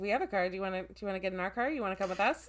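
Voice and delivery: jittery, awkward, nervous, stumbling acted speech. Retelling how he offers to take them in his car: imitating nervous talk. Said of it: "that nervous talk".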